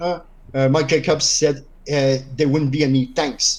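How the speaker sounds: usual speaking voice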